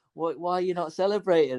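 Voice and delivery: wild, fired-up, high-pitched, excited yell. Retelling turning to a friend after a late goal: imitating own wild celebrating. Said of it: "So I was going wild".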